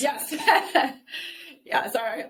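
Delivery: words bubbling through laughter. Guest answering the interviewer's question about their process, laughing while talking. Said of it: "I'm laughing because I do this often".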